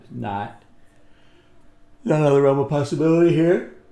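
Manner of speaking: loud words spoken through a yawn. Speaker going over a chart to a listener, yawning while talking. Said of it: "I'm yawning in your face".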